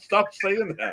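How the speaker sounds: high voice, laughing through the words. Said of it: "why are you laughing at that".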